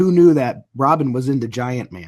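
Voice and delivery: ordinary talk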